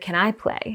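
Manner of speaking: hushed stage half-whisper, private and close. Retelling a friend's question in a workshop: imitating a half-whisper. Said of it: "she whispered in my ear".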